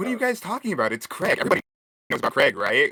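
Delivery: defensive tone. Answering the others who ask about craig, getting defensive. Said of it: "he got really defensive about everybody knows Craig".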